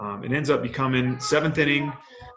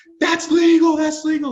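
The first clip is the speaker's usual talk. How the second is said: very high, very loud, shrill, full-throated scream; 8 dB louder than usual. Retelling protesting a play to the manager: imitating own past screaming. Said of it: "screaming at our manager".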